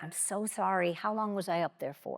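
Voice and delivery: soft, hushed stage whisper. Retelling what was said in the guide's ear: retelling a half-whisper. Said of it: "And I whisper in his ear".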